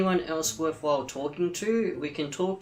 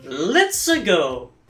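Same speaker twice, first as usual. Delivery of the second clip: put-on Italian accent voice, louder; 9 dB louder than usual. Commenting while moving toward the north bank, Italian plumber voice. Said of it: "now I'm sounding like an Italian plumber".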